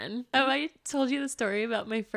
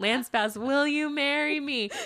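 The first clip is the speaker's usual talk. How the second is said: high, pitched-up scream; 6 semitones higher than usual. Retelling a first concert, imitating a scream at the top of lungs. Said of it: "I was screaming at the top of my frickin' lungs".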